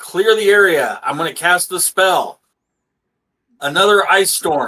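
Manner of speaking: shouting. Playing a character who calls out before casting a spell: yelling.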